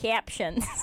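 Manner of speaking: put-on Midwest accent. Echoing how the other speaker said a word: imitating a Wisconsin accent. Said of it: "I love the way you just said captions".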